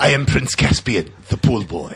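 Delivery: fake, put-on Spanish accent. Mocking the movie's fake accent as Prince Caspian: Prince Caspian's fake Spanish accent. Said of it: "that fake Spanish accent?".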